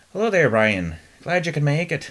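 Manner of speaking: slipping Irish accent attempt. Retrying a greeting line after slipping out of it: put-on accent attempt. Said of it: "now I'm slipping out of it".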